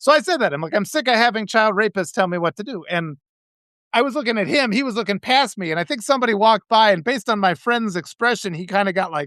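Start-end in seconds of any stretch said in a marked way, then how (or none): none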